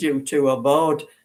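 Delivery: plain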